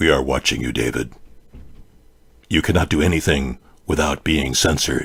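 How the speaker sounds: put-on very low, hushed, menacing scary voice. Speaking as the watching deep state, in a scary voice. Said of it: "that was a scary voice".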